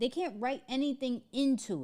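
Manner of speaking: can't stressed, pitched high and hit hard.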